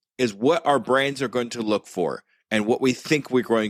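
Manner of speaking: ordinary talk, nothing marked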